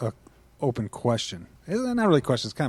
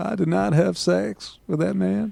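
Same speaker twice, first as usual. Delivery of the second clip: put-on rough, creaky voice, pitched up high; 8 semitones higher than usual. Someone has just asked you to do the voice, so do a Bill Clinton impression. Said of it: "do a Bill Clinton voice".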